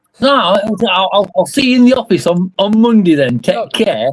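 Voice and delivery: fairly thick mock Yorkshire accent. Voicing a character who ends a phone call: Yorkshire accent. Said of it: "I appreciate the Yorkshire accent".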